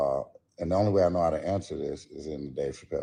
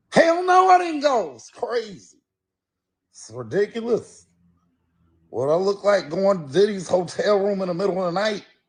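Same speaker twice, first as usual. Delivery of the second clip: very high, loud, swooping put-on voice; 5 dB louder than usual. Asked whether he went, the speaker answers in an impression: Dave Chappelle voice. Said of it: "in the Dave Chappelle voice".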